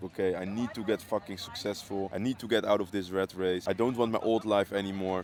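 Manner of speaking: ordinary talk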